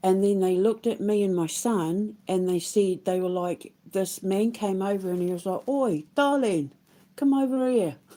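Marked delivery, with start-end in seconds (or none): 5.7-8.0 put-on London market trader accent, pitched up. Retelling how a fruit and veg seller called her over, imitating a Londoner accent. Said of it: "in his Londoner accent".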